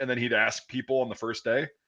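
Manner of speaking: ordinary talk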